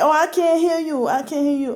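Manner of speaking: high, play-acted, jeering, mocking taunting tone. Recounting a harassing phone caller, the speaker retells his mocking taunt. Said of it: "started to say it in a mocking way".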